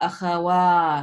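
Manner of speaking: akhawat, lengthened, stressed vowel after "wa". Pronunciation lesson on vowel length: long stressed vowel after wa in akhawat. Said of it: "The stress in this word is after the wa, ... That's where I'm extending it".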